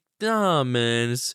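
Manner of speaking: mock flat, lifeless voice. Retelling a friend's phone call after finishing a book: imitating Jake sounding lifeless. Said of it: "he sounded like a dead fucking dog".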